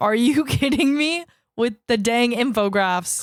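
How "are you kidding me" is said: half-hearted, mild, restrained small scream. Retelling a reaction to an intense scene: imitating someone screaming. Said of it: "clearly once again screamed".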